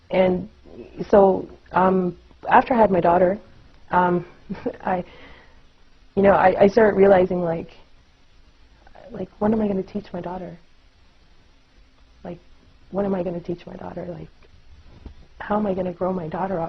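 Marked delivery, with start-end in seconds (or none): 9.4-16.7 tearful, soft, rushed, choked-up voice on verge of crying. Speaker telling a personal story about having a daughter: choking up, near tears. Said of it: "I'm going to cry because it's emotional".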